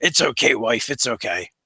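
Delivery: deep, low creature rumble, badly held down. Voicing a creature rumbling to the unconscious woman, trying to talk low. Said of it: "you hear him rumble in common".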